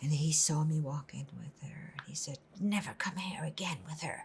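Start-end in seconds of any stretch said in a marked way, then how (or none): 2.6-4.2 quiet, hushed whisper. Retelling what a man said on seeing him walking with her, retelling a whispered warning.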